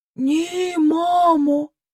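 timid, strained voice, words forced out with effort. A daughter behind the counter answers her mother, barely getting words out. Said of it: "на силу вимовила міс Фенні".

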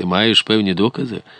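ordinary delivery, nothing marked

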